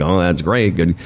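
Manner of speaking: usual speaking voice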